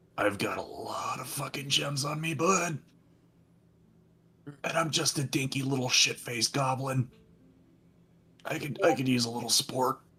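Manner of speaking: hushed, soft, under-the-breath half-whisper. Gibbles the goblin crawls onto Zog's shoulder to ask for support, half-whispering in his ear. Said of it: "crawl up onto his shoulder and whisper in his ear".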